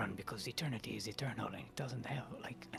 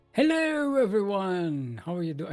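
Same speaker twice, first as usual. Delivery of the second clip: slight British accent, much higher, louder; 7 semitones higher, 13 dB louder than usual. Host opening the monthly amateur tournament and greeting everyone, slight british accent. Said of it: "I almost turned British".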